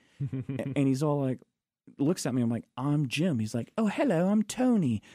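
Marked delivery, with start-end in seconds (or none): 3.8-5.0 put-on light British accent, pitched very high. Retelling first meeting Anthony Hopkins between scenes, quoting his greeting: Anthony Hopkins British accent. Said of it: "that's the best British accent I think I've ever heard".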